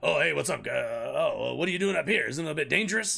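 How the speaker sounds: rough, raspy, creaky backwoods man voice. Retelling what a homeowner said at the door: imitating a man who sounded like Alex Jones. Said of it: "the dude, like, sounded like Alex Jones".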